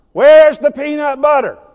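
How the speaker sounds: loud, high yell, carrying far. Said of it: "And I yell across the house".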